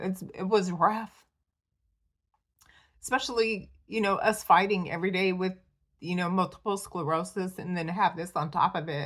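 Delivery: choked-up, emotional voice catching. Describing a rough year while fighting multiple sclerosis, voice choking up. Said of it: "sorry for getting emotional".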